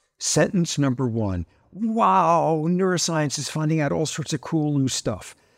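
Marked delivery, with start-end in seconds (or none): 1.7-5.4 put-on, heavily sarcastic mocking voice. Summing up compatibilist philosophers' papers in three sentences: sarcastic mock quote. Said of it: "I very sarcastically early in the book say".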